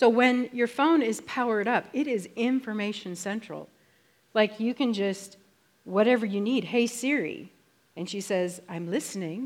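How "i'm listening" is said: put-on English accent, like a voice assistant. Showing how the phone assistant answers, as Siri in English accent. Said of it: "in her best English accent".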